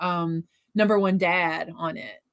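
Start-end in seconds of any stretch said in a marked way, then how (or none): none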